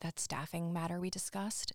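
put-on whisper. Retelling a scene where Sharpay asks Fulton something: whispering as Sharpay. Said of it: "Sharpay asks Fulton in a whisper".

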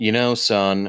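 syrupy, heartfelt, sentimental tone. Retelling a father's advice: Hallmark-moment sentimental tone. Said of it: "I'm trying to make it sound like a Hallmark moment".

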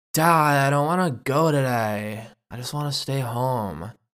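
mopey emo porpoise creature voice. Voicing a young porpoise talking to its dad: emo porpoise voice. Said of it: "It's an emo porpoise".

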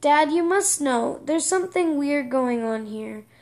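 plain

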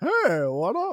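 put-on high, loud old Southern man voice. Speaker demonstrates the voice they just used: stereotypical old Southern man voice.

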